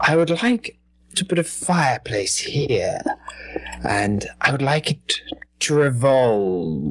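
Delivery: evil scientist voice. Retelling a comedy sketch, quoting the villain to a contractor: stereotypical evil scientist voice. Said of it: "sort of with the stereotypical evil fireplace scientist".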